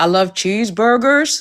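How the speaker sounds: weak, unconvincing put-on American accent. Asked before leaving to say a line in an American accent, bad American accent. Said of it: "give us your best American accent".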